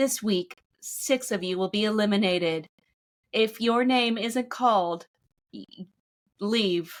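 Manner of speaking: put-on robotic announcer voice. Retelling how a survival show announced eliminations: imitating a robot announcer voice. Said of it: "a robot voice".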